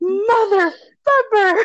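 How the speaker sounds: piercing, very high-pitched, shrill scream. Retelling how a guy threw a sheet pan and screamed at the speaker, retelling a scream. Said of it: "he just screamed at me like".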